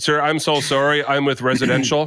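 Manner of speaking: ordinary talk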